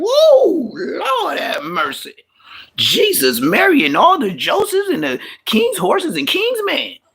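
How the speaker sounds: startled, high, swooping, rambling string of exclamations. Retelling jumping up at a shocking scene: imitating own startled outburst. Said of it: "I jumped out to see like".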